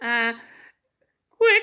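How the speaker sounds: piercing, penetrating metallic tone. Voice lesson example before adding space, penetrating metallic tone. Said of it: "Really penetrant, really metallic".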